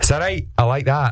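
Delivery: put-on, fake Scottish accent. Performing a line asked for by another speaker: put-on Scottish accent. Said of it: "do your Scottish voice".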